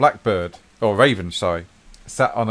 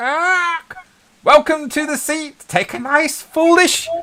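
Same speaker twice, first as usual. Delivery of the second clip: raven character voice, pitched way up; 4 dB louder than usual. Voicing the raven who greets the players: voicing the raven. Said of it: "And the raven goes".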